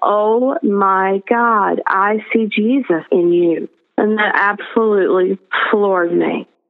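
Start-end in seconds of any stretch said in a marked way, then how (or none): 0.0-3.7 very slow, stretched-out, drawn-out exclaiming. Retelling what a cellmate suddenly said in front of everyone: retelling a loud exclamation. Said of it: "very loudly, she's like".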